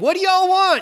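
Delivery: put-on yelling. Retelling what a guy at the table yelled: imitating someone yelling. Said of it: "he was yelling".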